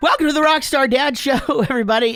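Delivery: voice breaking and cracking, very high pitch. Opening the next episode of the dads' show, voice cracking. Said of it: "And my voice cracks".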